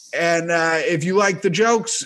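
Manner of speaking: plain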